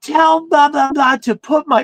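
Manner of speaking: mock, very high, shrill screeching scream. Retelling a phone call, acting out a woman on the line: retelling a scream into the phone. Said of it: "she fucking screams into the phone".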